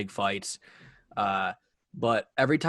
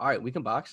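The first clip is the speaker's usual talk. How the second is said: put-on casual, low-pitched voice; 4 dB quieter than usual. Repeat a favorite quote from a training camp scrum, as DeAndre in a casual low tone. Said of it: "like just like low tone voice ever".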